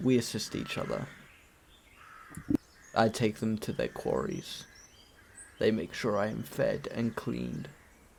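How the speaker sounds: deep, low, soft horse-like voice. Asked if it has an owner, a horse character replies in a low-pitched horse voice. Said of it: "low low pitch voice".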